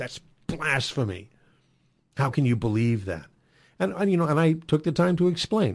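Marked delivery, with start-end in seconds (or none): 0.0-3.3 mock-furious, angry, trembling, shaking put-on voice. Retelling a caller's words, imitating an angry shaking voice. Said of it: "his voice was shaking. He was so mad".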